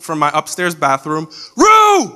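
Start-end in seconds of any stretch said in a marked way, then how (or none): 1.6-2.2 mock shrill shout, very high, loud. Retelling hearing Fo call from the upstairs bathroom during video games, imitating Fo shouting. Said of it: "I just hear Fo shouting".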